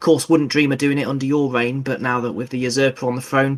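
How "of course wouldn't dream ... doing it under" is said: ordinary delivery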